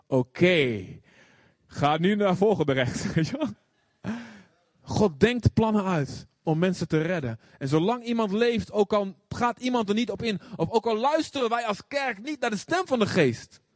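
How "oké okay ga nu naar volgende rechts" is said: very sarcastic navigation voice, heavy sarcasm. A speaker imagining a car navigation system, in a very sarcastic navigation voice. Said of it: "die zegt heel erg sarcastisch".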